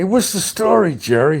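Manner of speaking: put-on loud, high, salesman-style Brooklyn Italian accent. Recalling a New York car salesman commercial: car salesman's Italian accent. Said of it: "a guy with Italian accent".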